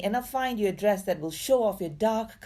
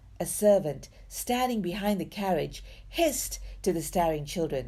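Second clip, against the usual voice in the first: usual speaking voice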